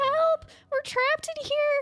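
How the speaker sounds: put-on very high-pitched little child's voice, calling out. The storyteller voices a hidden child the players hear, in a small child's voice. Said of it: "small child's voice".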